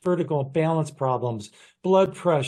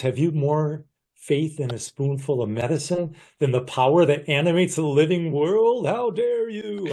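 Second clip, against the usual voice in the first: put-on ringing, resonant voice with an accent. Quoting one of a mentor's expressions: imitating Fred Barge. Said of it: "I'm imitating how he spoke".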